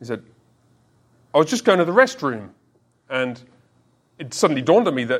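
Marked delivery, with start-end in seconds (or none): 1.3-2.5 put-on American accent, higher. Retelling what a man said back after being asked to repeat, imitating an American accent. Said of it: "He said it in American accent".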